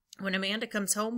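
ordinary delivery, nothing marked

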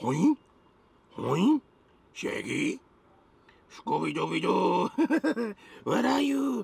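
very slow, creaky, rough, swooping cartoon dog voice. Drinking lemonade and joking about feeling like Scooby-Doo: Scooby-Doo voice. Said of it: "I feel like Scooby-Doo doing that".

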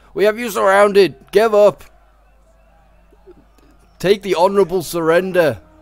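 high-pitched, commanding, forceful shout. Describing a battle, the speaker imagines Carthage's troops shouting, acting out a shout. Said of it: "They're probably shouting".

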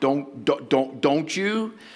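slow, deliberate, stern parent voice. Imitating a parent warning a strong-willed child: imitating a stern parent warning. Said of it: "Have you ever used that voice?".

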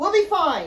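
forced confidence. A girl reassures a crying companion on a capsizing boat; forced confidence. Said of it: "not feeling anywhere near as confident as she forced herself to sound".

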